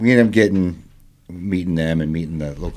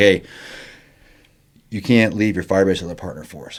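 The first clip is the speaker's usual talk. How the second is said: ordinary talk, nothing marked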